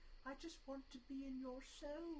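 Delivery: put-on, soft, high, timid, shy British accent. Imagining how he would talk: imitating shy British accent. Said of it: "shy British accent".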